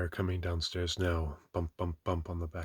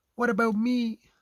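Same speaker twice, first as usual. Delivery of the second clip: very high, loud squeak; 10 dB louder than usual. Piglet looks up and interrupts the writer, in Piglet's squeaky voice. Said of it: "said in his squeaky voice".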